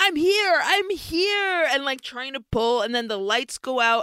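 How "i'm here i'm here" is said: play-acted, high-pitched scream stretched out long. Retelling a scene seen at the theater, imitating someone screaming. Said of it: "he's screaming like".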